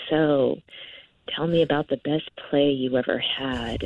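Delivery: low, hushed creepy voice. Retelling what a date said during the date: imitating a lowered voice. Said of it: "He sort of lowered his voice".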